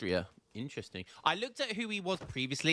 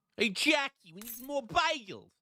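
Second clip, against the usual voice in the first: very high-pitched, put-on New York accent; 9 semitones higher than usual. Joking on stream, trying out a put-on new york accent. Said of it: "What do you think of my New York accent?".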